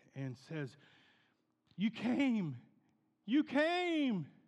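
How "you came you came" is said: put-on squealing, very high, loud, drawn-out child excitement. Retelling a village child running out to the car: imitating an excited child. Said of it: "This child's all excited".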